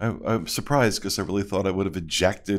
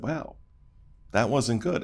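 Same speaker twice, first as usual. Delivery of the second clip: ordinary talk, nothing marked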